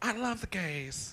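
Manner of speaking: very slow, drawn-out, every word stretched. Trying the voice again on a second take: Jennifer Coolidge impression. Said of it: "Take two".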